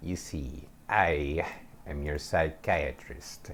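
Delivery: odd, soft, weird put-on witch voice. Retelling what she said to the speaker, in a weird witch voice. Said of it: "with this weird witch voice".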